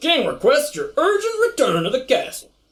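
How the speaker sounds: put-on Southern accent. Voicing Valerian, the captain of the King's Guard, who finds Zarkon: Southern drawl. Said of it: "southern drawl".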